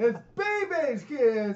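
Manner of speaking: mock dramatic announcer voice, high, slow and drawn out.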